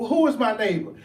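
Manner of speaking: dry, needling, sarcastic retort. Retelling a gospel story, voicing a man questioning Yeshua, mock-sarcastic question. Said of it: "The man talks out sarcastically".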